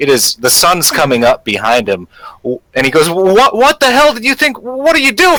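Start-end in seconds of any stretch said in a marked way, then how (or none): 3.1-5.4 very high, panicky, shaken, rushed frightened babble. Game master voices the Gamwell Gazette reporter, cowering outside: frightened, cowering in fear. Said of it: "cowering in fear".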